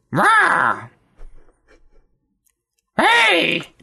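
yelping shout, very high-pitched.

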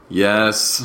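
defeated, resigned, slightly high-pitched tone. Answering whether ready for the next segment: defeated voice. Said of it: "the defeat in your voice is great".

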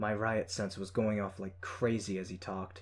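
ordinary delivery

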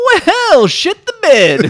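high, loud, slow, taunting clown voice.

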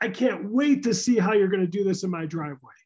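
keen, eager, can't-wait enthusiastic voice. Retelling how a guy came up to the speaker's truck, imitating an enthusiastic guy. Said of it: "comes up to me enthusiastically and says".

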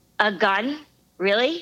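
ordinary delivery

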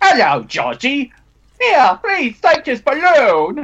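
very high voice swooping around in pitch. Imagining Malcolm McDowell playing Pennywise, Malcolm McDowell as Pennywise. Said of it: "Malcolm McDowell was supposed to be considered too".

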